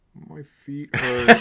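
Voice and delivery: sulky, somewhat loud complaining tone. Retelling a story of Solo Sikoa with sore feet: imitating Solo Sikoa sulking. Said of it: "sulking a little bit".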